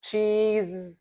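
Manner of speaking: smiling while speaking.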